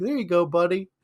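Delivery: high, cheery, friendly voice. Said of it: "he's like".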